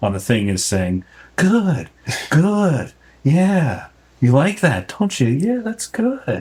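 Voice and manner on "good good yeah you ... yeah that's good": put-on very high, cooing, sing-song baby talk. Speaker voices what the corpse is saying, talking like to a baby. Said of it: "still sounds like she's talking to a baby".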